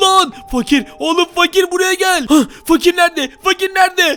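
frantic, high-pitched panicked yelling. Calling out for Fakir after seeing something, yelling in panic. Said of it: "niye bağırıyorsun?".

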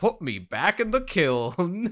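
high, swooping, very slow sing-song voice. Retelling what a friend said on seeing a Pokemon: imitating Dan's voice. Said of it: "he said it in that voice".

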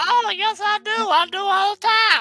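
strange, very high, loud, silly put-on voice. Answering a question on reading book forewords: strange put-on voice. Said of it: "your voice is strange".

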